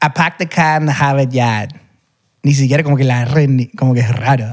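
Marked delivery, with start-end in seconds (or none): 0.0-1.7 northern American pronunciation. Comparing how people in the South and North would say a phrase, Northern US accent. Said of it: "y en el norte dirían".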